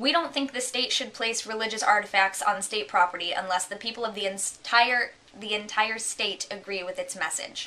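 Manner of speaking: ordinary talk, nothing marked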